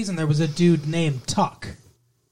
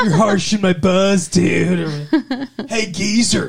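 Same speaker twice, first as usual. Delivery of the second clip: bad, loud California surfer accent, "dude" stretched; 3 semitones higher, 6 dB louder than usual. Guest on the episode, teased for terrible accents, doing an awful California surfer dude accent. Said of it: "Surfer dude accent".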